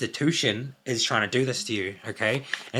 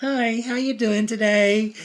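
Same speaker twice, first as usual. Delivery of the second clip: insincere, fake put-on voice, pitched up; 10 semitones higher, 4 dB louder than usual. Describing how someone comes across, the speaker imitates them: imitating a fake tone. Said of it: "This is like the voice I got".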